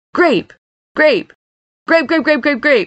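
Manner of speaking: high, spiteful, gloating, needling taunting tone. A man taunts his brother, repeating one word over and over: taunting. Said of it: "he taunted".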